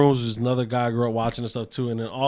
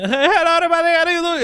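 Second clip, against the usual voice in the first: very high, loud, botched Spanish voice; 7 dB louder than usual. Retelling how a comedian sounds doing his joke Spanish voice: imitating a bad Spanish voice. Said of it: "he tries to do a Spanish voice".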